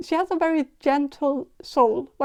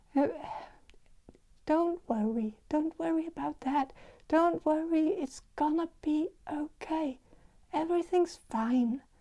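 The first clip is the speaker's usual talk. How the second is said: hushed, soothing, very soft half-whisper; 10 dB quieter than usual. Voicing an older woman sensed in a reading: imitating a soft half-whisper. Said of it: "She might also whisper a bit".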